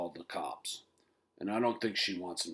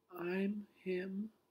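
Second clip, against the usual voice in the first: very small, soft, very high piping voice; 13 semitones higher, 7 dB quieter than usual. Reading a story, a boy answers a teasing boy in a very small voice. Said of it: "said Henry in a very small voice".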